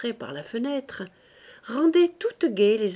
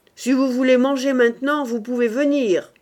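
sullen, sulky, raised and pitched up; 5 semitones higher, 7 dB louder than usual. A woman telling the family they can come eat, in a sullen voice. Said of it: "dit Rose de sa voix maussade".

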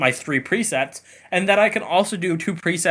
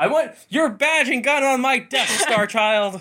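playful, pitched-up, put-on yelling; 9 semitones higher than usual. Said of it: "fun to yell the things at the T V".

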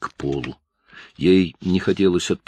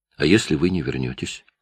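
ordinary delivery, nothing marked

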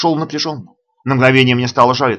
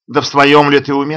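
ordinary delivery, nothing marked

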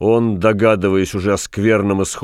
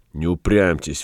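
ordinary delivery

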